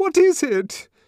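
very high, loud, shrill almost-scream. Her wrists held by a trembling man, a woman asks him, almost screaming. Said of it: "She almost screamed".

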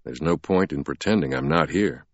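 usual speaking voice

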